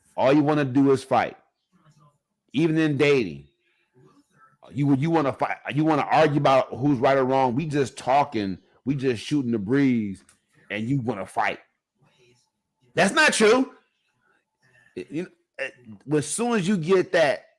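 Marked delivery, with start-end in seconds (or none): 13.0-13.7 very high, raised, argumentative, combative voice. Speaker acts out a woman's retort while dating, mimicking her combative tone. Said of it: "as soon as that voice change like that".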